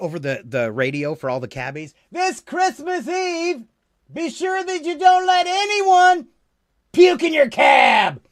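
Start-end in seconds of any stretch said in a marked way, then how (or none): 2.1-8.1 very high, drawn-out hollered shout. Retelling a Taxi line shouted over the cab radio: imitating a shout. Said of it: "he shouts out from the back".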